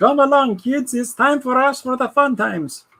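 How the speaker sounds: very high-pitched, swooping, weird Scandinavian accent. Showing how the imagined person would call to the kids, use a kind of weird Scandinavian accent. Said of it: "I'm going to do it like a kind of a weird Scandinavian".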